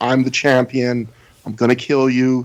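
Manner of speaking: put-on voice, calm yet intense. Describing a wrestler's champion image: imitating Samoa Joe, calm but intense. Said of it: "that very calm but intense".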